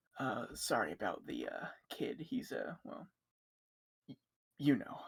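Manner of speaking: quiet, hushed whisper spoken on the side. Voicing a character apologizing to the guards about the kid: whispering to guards. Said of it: "he'll just whisper to the guards".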